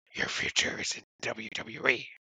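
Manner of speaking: hushed, breathy video-game villager babble voice. Retelling what someone said, in an Animal Crossing voice. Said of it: "I'm going to try to do my best Animal Crossing voice here".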